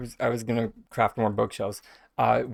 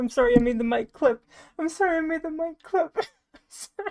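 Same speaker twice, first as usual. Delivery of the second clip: very high voice, talking through hard laughter. Apologizing for making the mic clip, laughing hard while talking. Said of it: "I'm sorry for laughing so hard".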